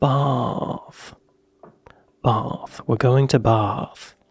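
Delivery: stretched British vowel in bath. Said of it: "vowel extension or the vowel shortening".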